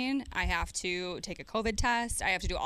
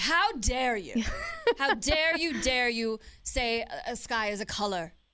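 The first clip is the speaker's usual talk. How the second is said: put-on British accent, very slow and drawn out; 5 semitones higher, 4 dB louder than usual. Mocking angry people's reply with a put-on voice: British accent. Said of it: "I like how you became British".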